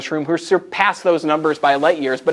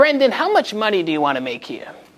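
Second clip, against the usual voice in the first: put-on Long Island-accented speech; 4 semitones higher than usual. Retell how Sandy Lupo, now retired, asked about your pay, in her thick Long Island accent. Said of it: "woman with a thick Long Island accent".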